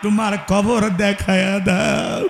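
wailing slowly, sobbing aloud.

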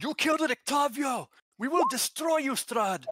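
very high, loud yell. In a tabletop game, a player's character yells at an enemy, yelling. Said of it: "Merrick yells out".

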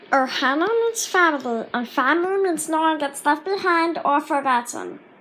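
put-on weird cartoon creature voice. Showing off the weird voices they can make, in a Stitch voice. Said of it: "Like Stitch from Lilo and Stitch".

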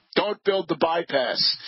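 plain

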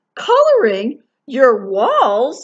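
high exclaiming. A mother finds her daughter Liza coloring on the walls, exclaiming. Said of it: "Her mother exclaimed".

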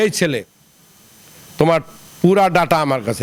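usual speaking voice

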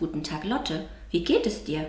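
ordinary delivery

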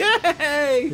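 acted, very high-pitched, bubbly, giddy excitement. Acting out a woman's reply with a little mock-giddy yay. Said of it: "With a little giddiness in her voice".

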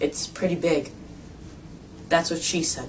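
bone-dry flat deadpan, hushed near whisper. A new video maker says his intro line in a dry tone. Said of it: "not really feeling this dry tone".

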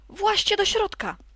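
urgent, high-pitched voice. As the hawk's shadow falls, the grey sock calls to the little mice, calling out quickly. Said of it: "zawołała szybko".

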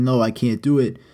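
ordinary talk

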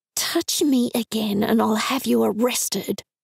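hissed in low tone. Narrator warns a man who touched their shoulder, hissed in a low tone. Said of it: "I hissed in a low tone".

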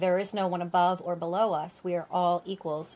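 ordinary talk, nothing marked

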